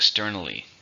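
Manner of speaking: "exTERnally" with clear, leaned-on second-syllable stress. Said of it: "Four, stress in the second".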